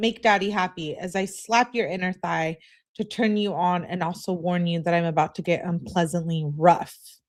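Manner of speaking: ordinary talk, nothing marked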